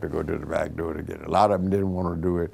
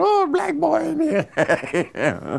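put-on screaming, higher pitch; 3 dB louder than usual. Retelling how a waitress reacted at the front door: imitating someone screaming. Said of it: "she started screaming".

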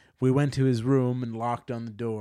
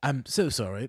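timid, bashful tone; 2 semitones higher than usual. Quoting a man's apology, doing a shy Hugh Grant impression. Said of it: "he said in a shy voice. ... That's my Hugh Grant".

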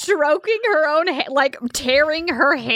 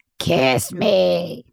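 put-on weird frog voice, much lower; 9 semitones lower than usual. Retelling a scene where he asks for a kiss, in a weird frog voice. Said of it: "he asks for it in like a weird frog voice".

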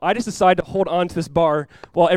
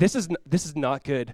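mock calm voice, lower and quieter; 3 semitones lower, 7 dB quieter than usual. Retelling a storm at sea, imitating a friend speaking calmly. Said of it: "He said it so calmly".

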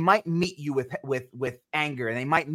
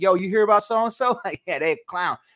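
put-on mocking tone, much higher pitched; 4 semitones higher, 4 dB louder than usual. Retelling how he talks about people on weekends, imitating himself mocking people. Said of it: "I'm mocking people".

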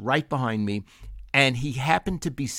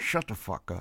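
put-on side-of-mouth talk, quieter; 5 semitones lower, 6 dB quieter than usual. Retelling what the speaker's brother kept saying at the checkout: imitating side-of-mouth talk. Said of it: "he's talking out of the side of his mouth".

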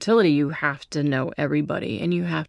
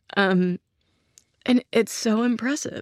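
teary, much higher and slower; 7 semitones higher than usual. Speaker telling of making the kids watch a film, teary. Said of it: "I'm getting teary again".

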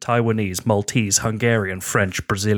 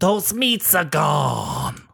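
rasping, rough, creaky put-on voice, swinging up and down; 6 semitones higher than usual. Narrating a made-up mob scene, voicing Frankie's reply to Tony Soprano: Frankie Boyle impression. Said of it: "That's a good Frankie impression".

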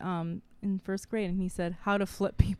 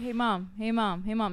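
put-on kid voice calling out. Retelling how her son keeps calling for her attention: imitating her son calling her. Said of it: "He's always like".

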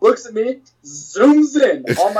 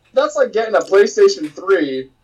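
ordinary talk

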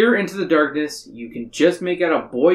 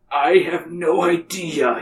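put-on very slow, drawn-out elderly man's voice. Narrator reads his reply after he frowns at the shirt, old man's voice. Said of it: "he says with an old man's voice again".

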